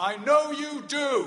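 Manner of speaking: very loud, high, carrying call-out. Leaving the hospital ward, the speaker recalls his dad calling after him: retelling dad's loud call. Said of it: "in a loud voice".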